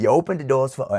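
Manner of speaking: put-on New York street accent. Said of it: "in my New York accent".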